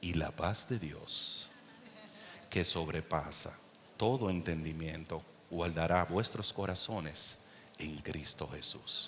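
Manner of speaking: very quiet, hushed radio-announcer style reading. Preaching on a Bible verse, the speaker reads it in an announcer voice. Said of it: "te lo voy a decir con voz de locutor".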